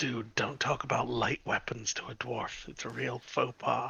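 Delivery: hushed, very quiet, barely there half-whisper. In a game scene, speaking aside to another character: half-whispering. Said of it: "I whisper to to Scramble".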